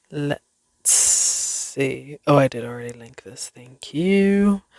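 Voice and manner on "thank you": sudden pitched-up British accent slipping in. Speaker wrapping up a recording and thanking listeners, sudden British accent. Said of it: "Don't know where the British accent came from".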